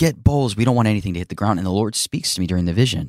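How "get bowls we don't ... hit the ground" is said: put-on urgent, loud yelled calling out. Retelling the wife calling for bowls in a vision: imitating the wife yelling. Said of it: "she was, like, yelling".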